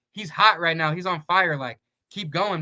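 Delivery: ordinary talk, nothing marked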